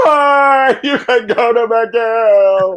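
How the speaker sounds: play-acted, very high, very slow, tearful, weepy crying wail. Speaker recounts their mother giving in about McGill: imitating Carol crying. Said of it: "Like totally Tammy Faye raccoon tears".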